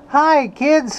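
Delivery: squeaked out, tiny and high-pitched. Attempting a Mickey Mouse impersonation to greet the kids. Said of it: "try and do a Mickey Mouse impersonation".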